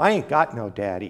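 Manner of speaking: mock trembling voice. Speaker recounting his boyhood answer to a big preacher, retelling a trembling reply. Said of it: "in a trembling voice".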